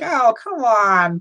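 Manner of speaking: very high whine, like a little crybaby. Recounting someone taking a stool from a kid, imitating a whiny crybaby. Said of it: "he kind of whines like some fucking like a little crybaby".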